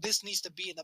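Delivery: ordinary delivery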